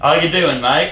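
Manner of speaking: high put-on Australian accent. Urged by the others to show an australian accent: australian accent. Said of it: "let's hear your best Australian accent".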